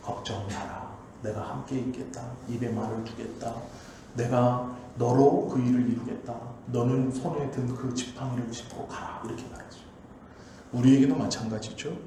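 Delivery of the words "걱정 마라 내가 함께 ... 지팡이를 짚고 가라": compassionate, reassuring god voice. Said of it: "안타까움으로 말씀하시는 거예요".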